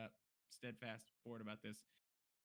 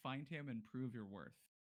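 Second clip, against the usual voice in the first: ordinary talk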